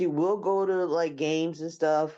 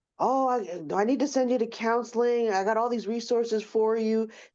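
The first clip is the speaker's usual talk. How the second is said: acted high, frantic, flustered man flipping out; 6 semitones higher than usual. Retelling finding out about the pregnancy at the doctor's office: imitating a man freaking out. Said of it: "literally freaking out".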